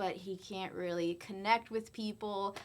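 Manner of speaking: normal talking voice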